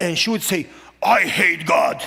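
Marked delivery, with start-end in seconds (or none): 1.0-2.0 loud, very deep bass, like a smoker. Retelling what Mona said when she came home, in her deep bass smoker voice. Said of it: "talking very deep. like a bass, like a smoker".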